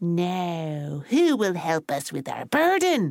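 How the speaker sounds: slow storybook small man voice, "now" drawn out. Storyteller voicing the short fella speaking to the tall fella, short fella's character voice. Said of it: "a voice that sounded like this".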